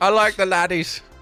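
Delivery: put-on Irish accent. Trying out an accent, then asking the others to rate it: Irish accent. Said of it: "Is that a good Irish accent?".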